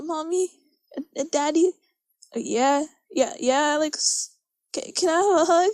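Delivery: mock stumbling, uneasy, awkward, hesitant, halting speech. Retelling saying good night and I love you to parents: imitating an awkward talk. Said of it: "You sound so awkward with your parents".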